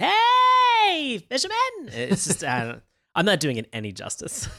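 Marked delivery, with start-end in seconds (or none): 0.0-1.6 "hey" stretched long and shrieked out. A co-host acts out a clown's catchphrase to a fisherman, Binky the Clown voice. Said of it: "in kind of a very clownish voice".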